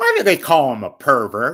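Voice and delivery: loud sing-song commentator voice. Doing a quick bit after counting in three, two, one: Andy Rooney impression. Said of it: "Quick impression of Andy Rooney".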